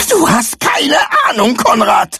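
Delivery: very high, furious, voice cracking. [name] rounds on her friend konrad after he begs her to trust him: voice cracking with rage. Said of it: "Paulas Stimme überschlug sich vor Wut".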